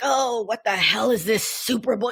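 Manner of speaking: put-on gruff grumbling older-man voice. Retelling an older guy's TikTok reaction to the Super Bowl: imitating a gruff older guy. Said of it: "he was doing that whole gruffy thing".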